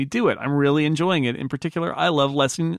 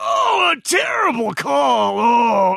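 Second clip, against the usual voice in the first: mock-angry impression, much higher and louder; 9 semitones higher, 5 dB louder than usual. Showing how he reacted to calls when watching NBA games, in an angry Walton impression. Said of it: "I would do the angry Walton".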